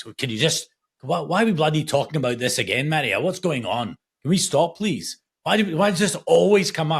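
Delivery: put-on agitated, upset, defensive outburst, pitched high. Retelling how dad reacts when death is mentioned: imitating upset defensive dad. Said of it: "He's like".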